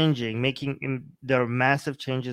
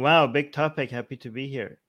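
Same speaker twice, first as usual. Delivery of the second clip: ordinary talk, nothing marked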